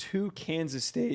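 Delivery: soft voice cracking mid-line. Reading out a ranked list of picks when asked, voice cracking. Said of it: "voice crack there".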